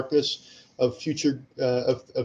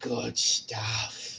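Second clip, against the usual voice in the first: put-on creepiest breathy whisper; 2 semitones lower, 8 dB quieter than usual. Answering a chat request for an awful voice: put-on creepiest voice. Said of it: "creepiest voice I could do".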